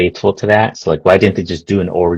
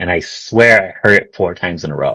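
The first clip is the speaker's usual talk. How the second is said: ordinary talk, nothing marked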